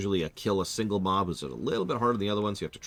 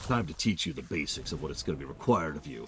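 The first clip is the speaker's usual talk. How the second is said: put-on fantasy orc character voice; 4 semitones lower than usual. Describing a military academy, a line done in an orc voice. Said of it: "I don't know why I'm using the orc voice here".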